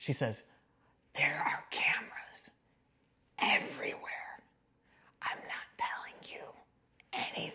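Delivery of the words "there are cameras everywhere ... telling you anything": very quiet, hushed, confidential, secretive whisper. Retelling how a diner waitress leaned in and whispered a warning: imitating a waitress whispering. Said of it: "She whispers".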